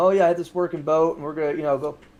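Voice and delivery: plain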